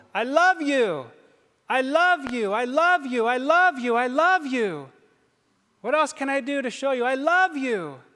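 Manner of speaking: acted, high, drawn-out crying scream at full volume. Preaching about the cross, voicing Jesus crying out: imitating Jesus screaming. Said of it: "screaming at the top of his lungs".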